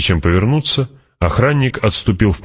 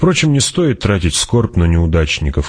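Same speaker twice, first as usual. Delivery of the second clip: plain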